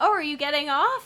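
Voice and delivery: clumsy, very broken English. Retelling the bus driver asking if they are getting off: very broken English. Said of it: "in his very broken English".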